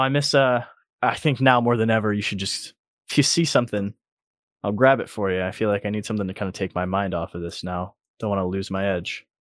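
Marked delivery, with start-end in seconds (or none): none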